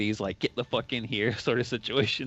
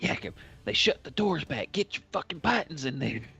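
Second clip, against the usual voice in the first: loud theatrical whisper; 4 semitones higher than usual. Playing a game, speaking to Yakim in a stage whisper. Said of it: "I'll kind of say like in a stage whisper".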